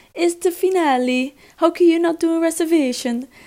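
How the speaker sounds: put-on loud English with an Italian accent. Retelling what the man at a busy restaurant asked about their missing reservation: Italian accent. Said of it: "Echt met zo'n Ita- It- Italiaans accent".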